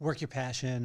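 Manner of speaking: ordinary talk, nothing marked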